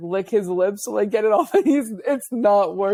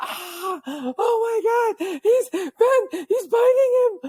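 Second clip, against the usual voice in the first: put-on alarmed shriek, very high, slow and drawn out; 13 semitones higher than usual. Retelling what another person screamed on seeing a dog attack: imitating Lex screaming. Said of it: "I just hear Lex start screaming".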